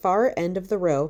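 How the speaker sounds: plain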